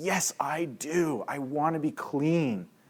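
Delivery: mock desperation, dragged out very slowly. Retelling a game's baptism scene, a man answering: imitating a desperate voice. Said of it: "He has this desperation in his voice".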